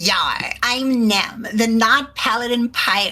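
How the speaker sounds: put-on pirate voice with a valley girl spin. A player introduces their character to the group in a valley girl pirate voice. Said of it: "You are the most valley girl of the pirates".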